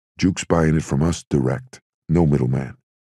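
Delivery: ordinary delivery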